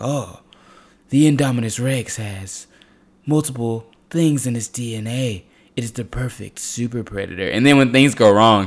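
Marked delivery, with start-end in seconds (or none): 0.0-7.5 slow, menacing movie-villain delivery. Retelling a film scene, imitating a villain's way of talking. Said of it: "he was talking like a villain".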